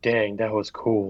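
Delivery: soft mutter under the breath, to oneself. Voicing Shathid trying to mutter under his breath: loud under-breath aside. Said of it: "trying to say it under his breath, but he says it really loudly".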